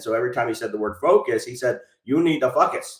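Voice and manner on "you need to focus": put-on thick, heavily laid-on Jamaican accent. Retelling what a teacher said at a group: heavy Jamaican accent. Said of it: "he had a very heavy Jamaican accent".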